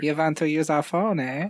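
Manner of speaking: put-on German accent. Acting out a scene about an Austrian pub, the speaker uses a German accent. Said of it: "We're going back to the German accent".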